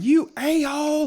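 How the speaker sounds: mock very high screaming. Retelling how the flag girl screamed at him: imitating someone screaming. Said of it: "screaming at you, at me, she's going".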